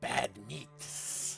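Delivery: hissed, creaky, rough monster voice. A game narrator voices a speaker behind the players, in a hissing voice. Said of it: "a hissing voice behind you that says".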